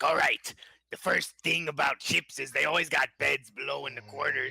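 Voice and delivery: ship's pirate talk. Player describes Brakal boarding the ship, speaking as him in a pirate voice. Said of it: "Why are you talking like that?".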